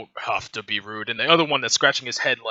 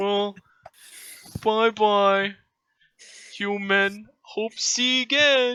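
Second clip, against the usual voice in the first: simple-minded brute voice, higher pitch; 10 semitones higher than usual. Voicing the dumb one, who offers to help pick herbs: dumb brute voice. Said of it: "the dumb one".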